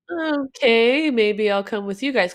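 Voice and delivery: ordinary talk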